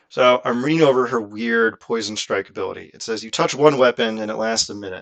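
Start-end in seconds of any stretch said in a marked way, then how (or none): none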